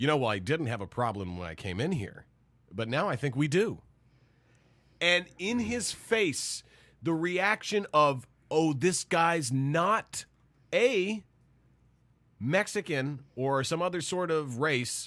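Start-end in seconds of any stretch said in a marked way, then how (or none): 0.0-3.8 acted, strained forced calm, low and quick. Recalling answering a man who asked what his problem was, retelling a forced calm reply. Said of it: "as calmly as I could".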